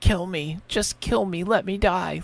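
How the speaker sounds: barely audible, faint, very quiet, slow voice. Describing the opening of The Brain That Wouldn't Die, the speaker imitates the title voice, really quietly. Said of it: "like really quietly".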